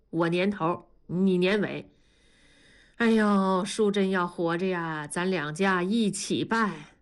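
ordinary delivery

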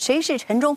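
loud angry shout.

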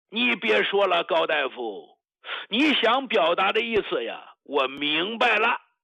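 choked, trembling voice with catching breath.

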